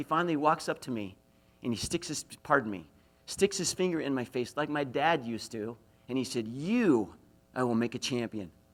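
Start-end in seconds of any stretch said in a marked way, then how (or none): 6.5-8.5 firm, forceful tone full of conviction. Retelling a wrestling coach's speech to him: imitating forceful conviction. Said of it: "he said it with such force and conviction".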